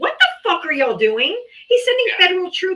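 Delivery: put-on disgusted rant. Retelling own reaction to a news channel: retelling a disgusted outburst. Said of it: "I was so disgusted".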